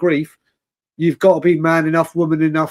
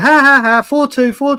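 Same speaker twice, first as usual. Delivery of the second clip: put-on high taunting gloat through bursts of laughter; 8 semitones higher, 4 dB louder than usual. Speaker recalls a caller gloating over the score, mimicking his laughing gloat. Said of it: "pissing himself with laughter".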